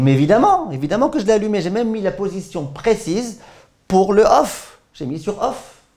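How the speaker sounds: indignant, high, insistent man's voice.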